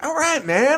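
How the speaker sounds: very high-pitched voice. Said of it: "he was talking to people and he's like".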